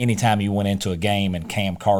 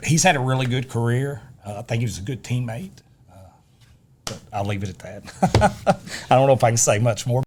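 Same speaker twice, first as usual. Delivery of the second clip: emotional, choked-up voice catching with emotion; 3 semitones higher than usual. Speaker praising a former teammate's career, emotional, choking up. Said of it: "you can tell I'm getting emotional".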